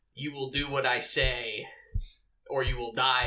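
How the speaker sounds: condescending, commanding trainer-type voice. Describing the voice of the warrior who trained the tribe: condescending warrior trainer voice. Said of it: "That condescending".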